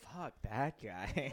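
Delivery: sexy, seductive delivery. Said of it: "That sounds sexy".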